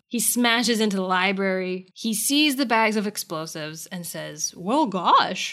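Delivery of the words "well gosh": silly, goofy cartoon machine-demon voice. Recapping a TV episode, the speaker quotes the demon in a goofy computer demon voice. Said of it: "in like a goofy computer demon voice".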